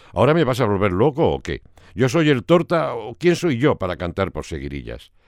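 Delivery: plain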